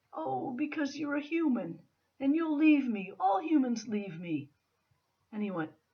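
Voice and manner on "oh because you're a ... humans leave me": very soft-spoken, gentle fairy voice. A storyteller voices the fairy answering a man climbing her tree: very soft voice. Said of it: "said in a very soft voice".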